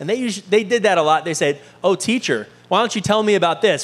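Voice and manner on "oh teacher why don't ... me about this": put-on sarcastic tone. Imitating the teachers of the law questioning Jesus: imitating a sarcastic tone. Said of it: "It's a little sarcasm".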